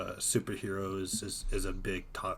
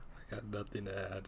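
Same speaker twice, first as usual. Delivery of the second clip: soft, muted, downcast, sad voice; 7 dB quieter than usual. Answering a question about adding anything: sounding sad. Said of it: "Why do you sound so sad".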